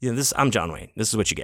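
ordinary talk

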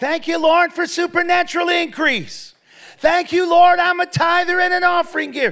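loud, high, all-out joyful shout. Retelling praising god aloud in a department store: retelling own shouting. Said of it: "I began to shout".

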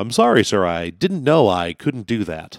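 radio announcer style voice.

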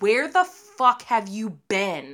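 put-on, acted-out scream. Speaker acts out what they want to scream at other people, mock scream at them. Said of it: "you just want to scream at them".

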